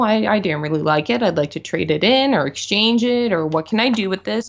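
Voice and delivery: ordinary delivery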